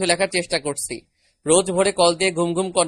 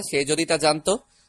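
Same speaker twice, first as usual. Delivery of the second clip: usual speaking voice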